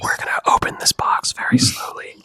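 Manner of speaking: joking, mock ASMR whisper. Doing a live unboxing of a card, in a mock asmr whisper. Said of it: "The A S M R".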